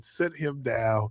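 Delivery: put-on yelling. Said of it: "and I'm yelling".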